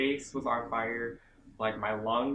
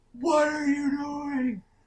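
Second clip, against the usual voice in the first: very shrill, very high, slow, drawn-out yell; 6 dB louder than usual. Retelling how the instructor yelled at a guy in the chamber: imitating someone yelling. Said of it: "He's yelling at this guy".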